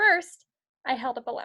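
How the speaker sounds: short, quick catch of breath after first word. Showing the breath taken after a word like first: quick breath after 'first'. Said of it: "It's a quick breath".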